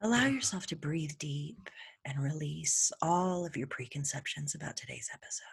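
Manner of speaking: very hushed, whisper-soft, soothing yoga-instructor ASMR voice. Podcast host introducing this week's episode in a yoga ASMR voice. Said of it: "You keep talking like that".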